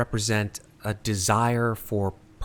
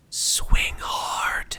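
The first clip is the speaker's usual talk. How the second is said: whispering voice. Voicing a trusted voice whispering to a player character: whispering voice. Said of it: "only two words through this whispering comes".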